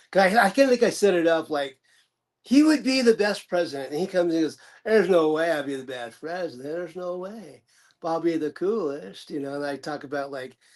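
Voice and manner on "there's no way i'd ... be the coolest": put-on laid-back Texas drawl. Showing a comedy bit with the president as Matthew McConaughey. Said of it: "started doing McConaughey".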